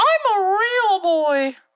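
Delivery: put-on very high, loud puppet-boy voice. Speaker does the Pinocchio line once more after another try: Pinocchio voice. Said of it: "What was the Pinocchio one?".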